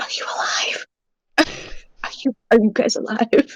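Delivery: careful, breathy, hushed whisper, called out. A player character asks whether the plates in a cabinet are alive, whispering. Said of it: "I'm gonna whisper into the place".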